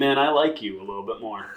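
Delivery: ordinary delivery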